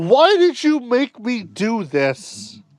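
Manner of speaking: put-on anguished, demanding cry with big pitch swings. Comparing a scene to Omni-Man yelling at Invincible, Omni-Man yelling impression. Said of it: "Omni Man yelling at Invincible".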